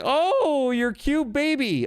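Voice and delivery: very high, very slow, insincere sweet tone. Retelling what was said to a baby after pretending it was cute: retelling feigned admiration of a baby. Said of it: "you have to pretend they're cute".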